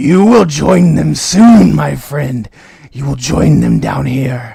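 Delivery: very loud, deep, rumbling bass voice. Narrator voicing a skeleton right up close to the listener's face, rumbling basso voice. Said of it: "that same rumbling basso voice go".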